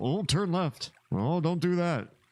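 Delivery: very high, mocking, nagging voice. Retelling how he gives unwanted directions, imitating him giving backseat directions. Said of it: "And here he is all".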